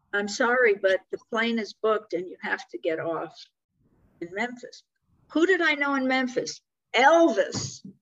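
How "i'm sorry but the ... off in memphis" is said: ordinary talk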